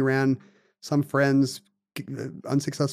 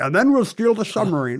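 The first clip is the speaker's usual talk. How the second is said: put-on Scottish accent, pitched higher; 6 semitones higher, 3 dB louder than usual. Retelling how the movie scene zooms back out: Sean Connery impression. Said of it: "your Sean Connery impression".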